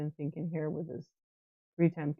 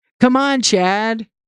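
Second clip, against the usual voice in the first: full-throated, very loud, high yell; 6 semitones higher, 17 dB louder than usual. Urging someone on during a stream, yelling. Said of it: "I'm going to yell if I want to".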